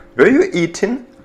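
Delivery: question-like rising tune on eating. Showing question intonation in an English lesson, rising intonation on eating. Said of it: "Интонация вверх".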